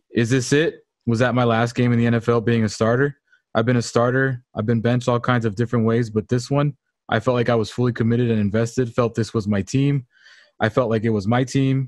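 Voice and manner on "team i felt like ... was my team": ordinary talk, nothing marked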